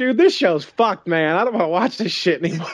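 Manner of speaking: put-on fed-up angry griping. Speaker recounts their own earlier reaction to a show, retelling own angry rant. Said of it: "I was all pissed off about it".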